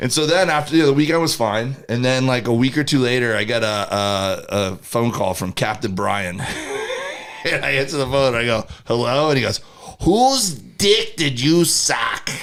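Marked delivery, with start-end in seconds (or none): 10.0-12.3 put-on Boston accent, pitched up, drawn out, slow. Speaker retells a phone call he got from Captain Brian: Captain Brian's Boston accent. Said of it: "this is a Boston accent, by the way".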